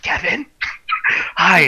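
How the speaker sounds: hushed, secretive whisper. Retelling how the moderator whispered on the phone: imitating someone whispering. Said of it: "he starts whispering to me".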